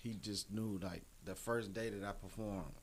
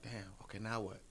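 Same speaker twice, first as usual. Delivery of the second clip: normal talking voice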